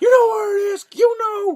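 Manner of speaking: mock aggressive cop voice, very high pitch. Speaker retells a cop who suddenly turned on a woman: retelling an angry cop. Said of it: "the cop was real mad".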